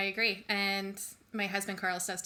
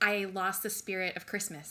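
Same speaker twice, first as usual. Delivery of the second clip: normal talking voice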